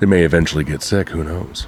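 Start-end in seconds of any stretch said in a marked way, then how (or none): 1.1-1.7 soft whisper. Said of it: "Why are you whispering to me?".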